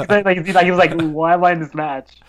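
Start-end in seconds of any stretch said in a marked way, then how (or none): 1.0-2.0 mock bored, unenthusiastic, uncaring, couldn't-care-less tone. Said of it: "he didn't really care".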